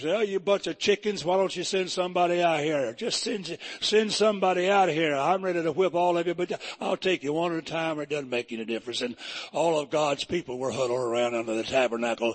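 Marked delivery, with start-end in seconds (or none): none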